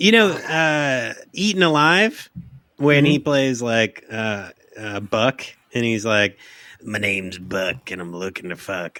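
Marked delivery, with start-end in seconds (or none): 6.8-9.0 put-on creepy voice, quieter. Recalling Robert Englund's role in Eaten Alive, quote the character in a creepy Buck voice. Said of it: "plays a really good creep".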